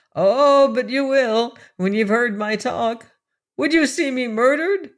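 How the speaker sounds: trembling, wavering, high, quavering voice. A narrator reads a man's frightened plea in a story, quavering voice. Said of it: "still with quavering voice".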